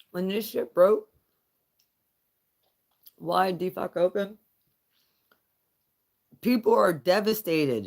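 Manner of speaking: talking while chewing, mouth full. Telling a story to listeners, talking while eating jelly beans. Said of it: "I'm eating jelly beans".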